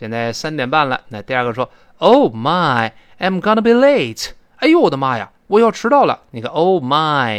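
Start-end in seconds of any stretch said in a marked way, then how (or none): 6.8-7.4 "my" stressed and louder. Demonstrating a phrase from an example dialogue for learners, stress on "my". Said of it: "注意这个my 要重读".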